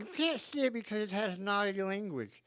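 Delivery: very high nerdy voice, sounding like talking through braces. Describing a nerdy South Park character who works at the theater, nerdy voice with braces. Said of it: "And he talks like this".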